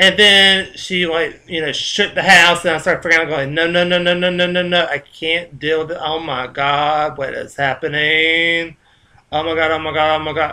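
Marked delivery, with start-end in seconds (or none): none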